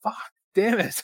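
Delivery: screaming, pitched way up. Watching a match, imitating the crowd screaming. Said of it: "Just screaming".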